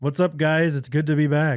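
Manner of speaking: slow, glum, depressed-sounding voice. Doing an impression of Justin for the podcast: imitating Justin. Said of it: "do an impression, impersonation of him".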